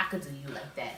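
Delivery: hushed, very soft, close half-whisper. Retelling what someone half-whispered in the speaker's ear: imitating someone half-whispering. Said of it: "whispering in my ear".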